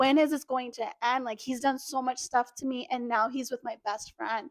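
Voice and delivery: ordinary talk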